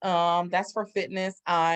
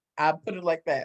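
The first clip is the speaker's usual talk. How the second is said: ordinary talk, nothing marked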